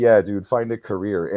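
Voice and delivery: ordinary talk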